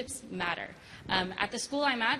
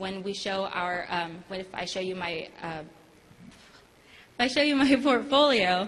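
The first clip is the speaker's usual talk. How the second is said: halting, unsure, slow, rising delivery with restarts; 2 semitones lower, 6 dB louder than usual. Presenting to a group, the speaker stumbles over showing a portfolio; a little nervous. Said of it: "I'm a little nervous if you guys can't tell".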